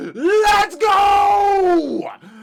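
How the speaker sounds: high, loud, excited screaming.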